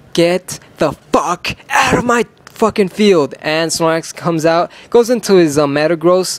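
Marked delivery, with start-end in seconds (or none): 0.1-3.3 loud barked-out voice. Narrating his Pokémon battle, screaming at the opponent's Snorlax: retelling a scream at Snorlax. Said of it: "I'm gonna scream at this Snorlax".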